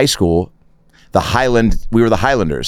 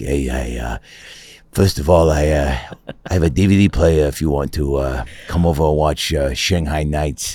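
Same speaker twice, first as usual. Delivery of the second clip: put-on voice, much lower in pitch, quieter; 7 semitones lower, 4 dB quieter than usual. Imitating a guy in a live stream chat: East Coast-y guy impression. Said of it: "He's a little East Coast-y".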